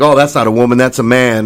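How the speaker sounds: ordinary talk, nothing marked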